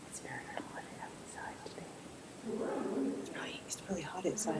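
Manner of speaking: soft, whispered voice. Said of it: "I'm whispering".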